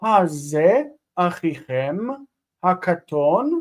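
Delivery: rising intonation climbing on hakaton. Hebrew lesson, the word ha marks a question: sentence rising like a question. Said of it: "I raise my voice in a question".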